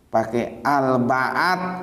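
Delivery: stress on Al-Ba'at, drawn out very slow, rising.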